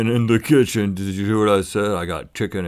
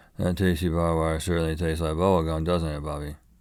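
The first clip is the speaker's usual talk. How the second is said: put-on slurred, low, soft teenage mumbling, consonants swallowed; 4 semitones lower, 6 dB quieter than usual. Before an articulation exercise, the speaker reads a written sentence in teen mumble voice. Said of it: "just read it in teen mumble voice".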